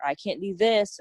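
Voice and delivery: ordinary talk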